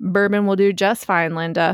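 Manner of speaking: usual speaking voice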